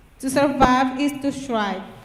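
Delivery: ordinary delivery, nothing marked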